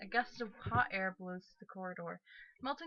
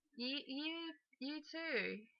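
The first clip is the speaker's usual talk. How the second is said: put-on slow, higher, drawn-out British accent; 6 semitones higher, 6 dB quieter than usual. Reading a story aloud, voicing a roommate: British accent. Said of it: "I just made her British, too".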